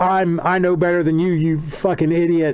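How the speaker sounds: plain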